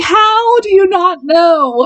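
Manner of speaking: play-acted mild yell, high and drawn out. Describing how they react while watching a TV series, yelling at the TV. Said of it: "Sorry, I didn't mean to yell".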